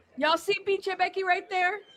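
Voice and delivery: yelling out. Spotting someone on screen and calling out to viewers: yelling out. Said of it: "I had to yell that out".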